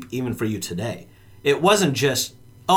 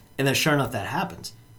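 ordinary talk

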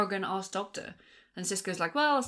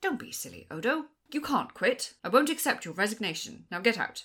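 curt, clipped, every word kept short; 2 semitones higher than usual. Trying out how he would do it, the speaker attempts a Sisko impression. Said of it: "Nice Sisko impression".

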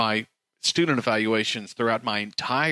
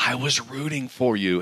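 put-on whispering voice. Retelling what staff in the dean's office say: imitating someone whispering. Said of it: "and they'll whisper it".

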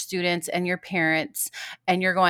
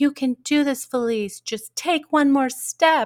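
play-acted, high, encouraging cheer; 7 semitones higher, 4 dB louder than usual. Retelling how her family cheered her on while her dad filmed, retelling cheering.

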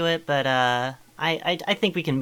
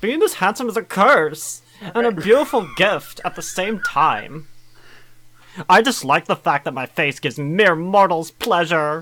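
put-on cartoon princess character voice; 4 semitones higher, 4 dB louder than usual. Reading text aloud to the others, the speaker does a Lumpy Space Princess voice. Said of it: "read that in a Lumpy Space Princess voice".

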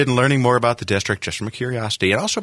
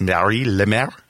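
French-American accented speech. Asked to say a name with a French-American accent: French-American accent. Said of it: "It'd be much cooler if you said it like with a French-American accent. ... There it is".

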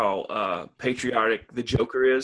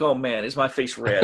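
ordinary talk, nothing marked

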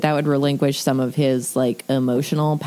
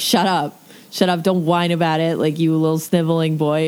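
plain

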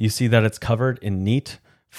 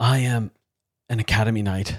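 wheezing, wheezy voice. A boy in pain tells you who he is, wheezing. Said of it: "the boy wheezes".

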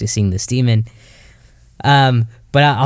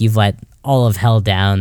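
ordinary talk

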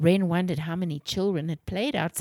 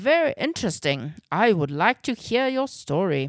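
plain

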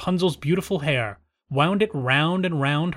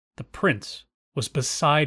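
ordinary delivery

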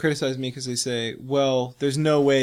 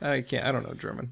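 normal talking voice

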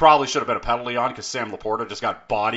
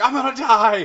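play-acted very high, loud, shrieking scream; 12 semitones higher, 5 dB louder than usual. Recalling the sled scene in the Grinch movie, imitating Jim Carrey screaming. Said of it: "screaming like".

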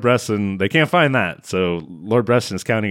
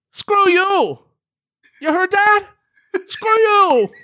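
very high, hollered outburst; 4 dB louder than usual. Retelling a movie scene where a character yells at a speaker: imitating someone yelling. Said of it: "he yells".

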